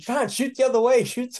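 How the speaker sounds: shrill, very high shouting. Retelling a rope descent while spinning, imitating own past yelling at John. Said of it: "I'm yelling at him like".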